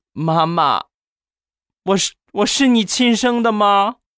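mock tearful, high, pleading voice. Retelling how a girl, still in tears, asked her mother: imitating tearful pleading. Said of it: "当时含着泪跟她妈就说".

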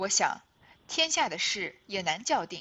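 loud, sneering, scornful scolding tone.

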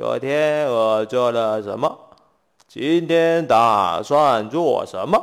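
low, weak, lifeless, listless zombie voice. Speaker imitates a zombie speaking at the daily morning meeting, listless zombie voice. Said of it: "每一只僵尸有气无力的说".

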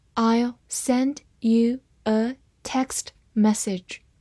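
slow, careful read-aloud, like classroom dictation.

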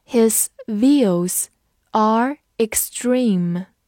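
slow, drawn-out read-along voice.

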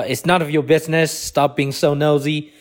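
usual speaking voice

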